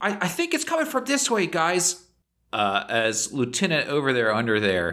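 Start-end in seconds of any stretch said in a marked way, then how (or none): 0.0-2.0 squeaky voice, much higher in pitch. Player throws their voice in a roleplaying game to mislead enemies, squeaky voice. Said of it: "a different voice kind of squeak up and say".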